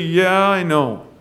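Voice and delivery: abashed, caught-out, sheepish tone. Speaker retells the camp leader's answer when confronted, retelling a sheepish reply. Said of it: "the man said sheepishly".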